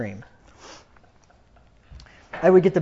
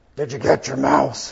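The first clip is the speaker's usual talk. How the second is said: slow, eerie deep morning voice, scary-movie style. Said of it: "your voice is real deep in the morning".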